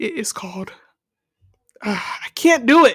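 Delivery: anxious, nervous voice. Working up to naming a feared board game: shaking with fear. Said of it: "I'm shaking right now".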